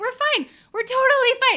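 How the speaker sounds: panicky, very high and loud. Speaker imitates how people insist they are fine: mock-panicked high voice. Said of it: "like the high voice that keeps going".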